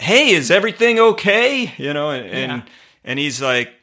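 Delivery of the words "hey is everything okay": acted loud call, much higher. Retelling calling back to a man so he can hear: retelling a loud call. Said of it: "with a loud voice so he can hear me".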